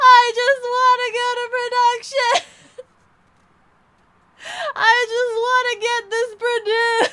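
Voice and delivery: very high, very loud, full-throated yell. Recalling being alone in the shower, retelling a shout in the shower. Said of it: "I'm like shouting in my shower".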